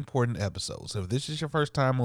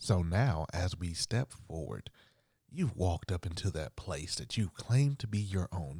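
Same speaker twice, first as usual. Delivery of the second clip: put-on film narrator, movie trailer voice; 4 semitones lower, 5 dB quieter than usual. Narrating the listener's steps forward, in the speaker's movie voice. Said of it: "It's like my movie voice".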